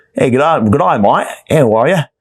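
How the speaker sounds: clumsy, bad, fake put-on Australian accent. Talking about being on Australia time, speaker tries a bad put-on Australian accent. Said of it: "Maybe I'll start talking with an Australian accent".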